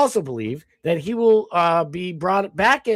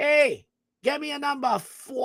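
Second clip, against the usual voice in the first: pitched-up, movie-style Boston accent; 8 semitones higher, 4 dB quieter than usual. Explaining how people say the number four, the speaker demonstrates a movie boston accent. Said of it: "it's like the movie Boston accent".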